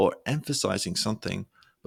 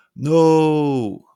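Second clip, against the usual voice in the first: no with O stretched, trailing off; 6 semitones higher, 11 dB louder than usual. Example of emphasis for drama: held O in no, then fading. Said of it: "really stressing the O before your voice fades".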